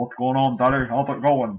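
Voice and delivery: strange dog voice. Showing his dogs on Twitch, he speaks for his favorite dog in Macy's weird voice. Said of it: "Macy's got a weird voice".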